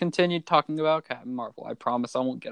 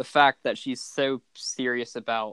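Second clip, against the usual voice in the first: ordinary talk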